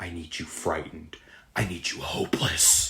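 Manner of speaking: low, hushed, possessed demonic voice. Recounting a scene where a woman turns demonic, in a demon voice. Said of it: "she starts to kind of go into like a demon voice and she goes".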